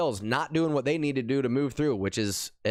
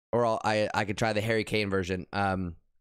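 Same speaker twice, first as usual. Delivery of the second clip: ordinary talk, nothing marked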